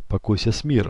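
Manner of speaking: usual speaking voice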